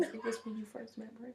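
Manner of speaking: hushed voice. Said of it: "Now we whispering on camera".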